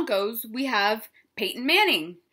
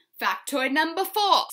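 English accent, put on for show; 4 semitones higher than usual. Speaker addressing the audience, showing off a put-on english accent. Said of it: "See how I did that English accent?".

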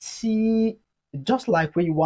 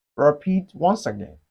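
ordinary talk, nothing marked

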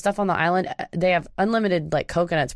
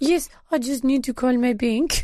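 put-on, vaguely European French accent, a touch high; 6 semitones higher than usual. Retelling Anna's reply to Williams, in a fake French accent. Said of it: "I'm trying to sound French".

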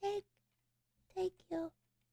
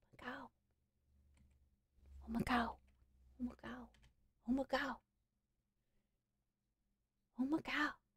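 soft, hushed, choked-up whisper, nearly in tears. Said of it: "I'm just really close to crying".

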